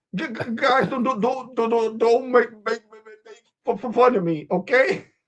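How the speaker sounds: very high, heavy, tripping stuttering stammer. Retelling what a man told people: imitating someone stuttering. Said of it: "Your ass started stuttering like a motherfucker".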